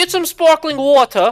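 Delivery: put-on British accent. Imitating someone's advice about serving friends sparkling water: imitating a British accent. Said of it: "he talks with a British accent".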